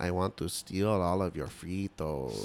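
slow, soft, drawn-out cartoon bandit voice. Recalling a character and mimicking how he talked: Slowpoke Rodriguez voice. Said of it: "he kind of talked like the slow guy on the Speedy Gonzalez cartoons".

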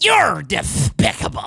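low, swooping cartoon duck character voice. Explaining that he does characters rather than accents, Daffy Duck voice. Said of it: "like I do Daffy Duck".

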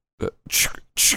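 soft, quick sniffing sounds. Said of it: "someone's making that sound with their noise".

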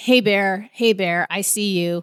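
plain

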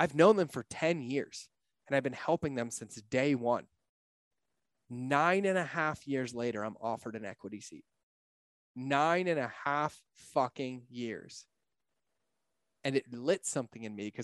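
voice filling and welling up with emotion. On a call, telling a story about a company they own; getting emotional. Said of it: "I'm gonna get emotional".

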